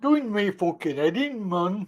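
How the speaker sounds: deliberately bad, soft Scottish accent. Speaker repeats their own complaint in another voice: bad Scottish accent. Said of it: "it's the worst Scottish accent I've ever heard".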